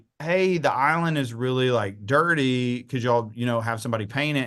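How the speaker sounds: usual speaking voice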